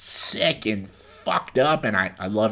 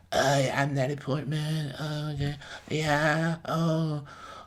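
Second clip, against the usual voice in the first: bland, flat, slow droning monotone, pitched up; 6 semitones higher, 8 dB quieter than usual. Criticizing an actress's performances: bland monotone Natalie Portman impression. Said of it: "so bland and monotoned and just this".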